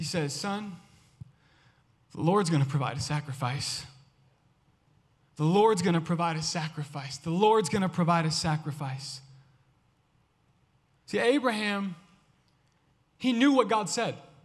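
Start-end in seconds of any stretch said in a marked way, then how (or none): 0.3-9.2 put-on shaky, tearful voice. Speaker imagines Abraham answering his son, acting out Abraham's shaky voice. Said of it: "his voice shaky".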